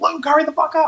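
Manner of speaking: mock very high, abrupt, shrill scream. Retelling a movie scene, acting out a character going from chill to screaming. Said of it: "goes from very chill to just like screaming".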